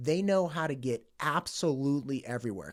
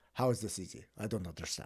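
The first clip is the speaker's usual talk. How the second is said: put-on German accent, lower and quieter; 7 semitones lower, 8 dB quieter than usual. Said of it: "so he's got this German accent".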